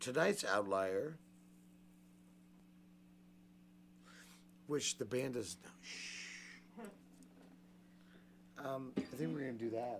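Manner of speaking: whispering. Show host tells listeners about tonight's outlier, whispering. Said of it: "why am I whispering to you?".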